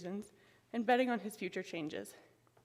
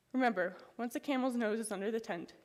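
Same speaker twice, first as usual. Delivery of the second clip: ordinary talk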